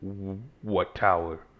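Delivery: grave, earnest, dead-serious voice with stammering. Voicing a creature asking the players about the tower: serious voice. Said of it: "but he gets real serious".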